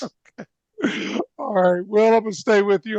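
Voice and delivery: words breaking up with laughter throughout. Moving on to the next question, laughing while talking. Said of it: "I'm trying to stop laughing".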